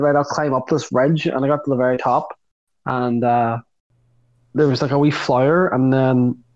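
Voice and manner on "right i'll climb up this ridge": usual speaking voice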